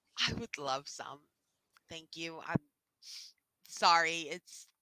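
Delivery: voice shaking and trembling. Voicing a woman on the verge of tears accepting help: voice shaking. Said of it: "her voice shakes".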